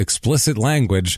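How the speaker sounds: plain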